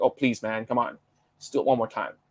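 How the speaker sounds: plain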